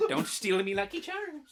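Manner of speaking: high, loud, way too eager, overexcited cry. Adding a joke line as the episode wraps up, sounding too excited. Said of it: "You sound too excited".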